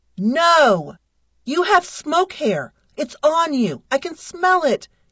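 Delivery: high cry, stretched "no". A man confronts the narrator, who refuses to shake their head; cried out. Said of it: "he cried".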